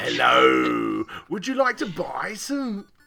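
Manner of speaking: put-on polite, high, sing-song telephone voice. Joking about how they do not talk on the phone: telephone voice. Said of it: "my telephone voice".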